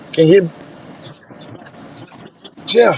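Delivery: hushed whisper. Telling Jeff something he shouldn't tell anyone else, whispering. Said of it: "I'm gonna whisper this to you".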